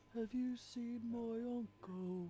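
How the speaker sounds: mournful, lonesome call. Game narrator voicing a voice heard from outside, strange, sad, lonely. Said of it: "the strange, sad, lonely voice off in the distance".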